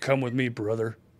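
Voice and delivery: big, booming pro-wrestler promo voice. Imagining an angel coming for you after death: Hulk Hogan voice. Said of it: "the angel that comes down to spirit me away is Hulk Hogan".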